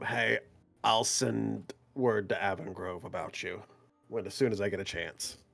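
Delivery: hushed, very low half-whispered aside. Travelling alongside the dwarf Isaac, a player's character speaks to him, half-whispering. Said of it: "I'll whisper to him".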